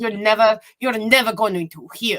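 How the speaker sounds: loud, thick, heavy put-on European accent. Retelling a woman who insisted on back surgery, in a thick European accent. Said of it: "some sort of thick European accent".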